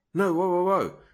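high, loud, alarmed cry. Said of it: "But the wife is like".

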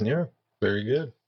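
patronizing, superior tone. Replying to friends who are drinking water before the gym: condescending. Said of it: "You sound so like condescending".

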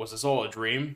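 usual speaking voice

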